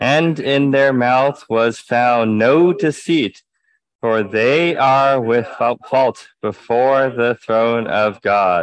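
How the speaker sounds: slow, deliberate, loud reading-aloud style.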